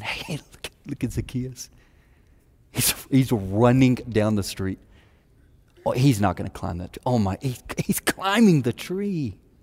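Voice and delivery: snickering, jeering, gossipy crowd voices. Retelling how the crowd mocked a man climbing a tree: imitating snickering onlookers. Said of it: "you can almost hear the snickers going".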